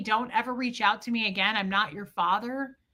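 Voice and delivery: ordinary talk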